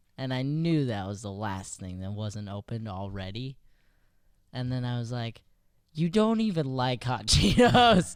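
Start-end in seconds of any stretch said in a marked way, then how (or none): 6.0-8.2 snide, sarcastic, raised and pitched-up jab. Retelling how they raised the snack complaint: imitating own sarcastic remark. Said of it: "I did bring it up in a very sarcastic way".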